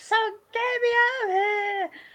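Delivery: put-on shrill, very high, loud screaming. Recounting being stabbed in the leg and wanting out; retelling their own screaming. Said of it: "I was like screaming like".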